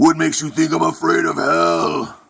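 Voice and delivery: gravelly, creaky, high voice.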